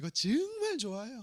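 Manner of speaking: regional Gyeongsang Korean dialect accent. Showing how gyeongsang people pronounce a phrase: gyeongsang dialect accent. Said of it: "경상도 분들 뭐라고 말합니까?".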